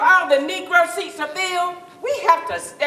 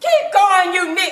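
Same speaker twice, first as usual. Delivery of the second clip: mock angry, hostile screaming; 4 semitones higher, 4 dB louder than usual. Retelling how a restaurant owner came running out: imitating someone screaming. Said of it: "screaming at us, shouting".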